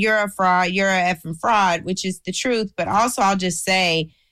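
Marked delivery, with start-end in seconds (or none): none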